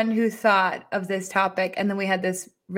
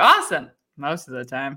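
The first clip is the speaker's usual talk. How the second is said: low voice with swinging rhythm; 5 semitones lower than usual. Retelling her father answering clients: imitating her father. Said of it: "And he'll be like".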